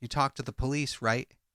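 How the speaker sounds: plain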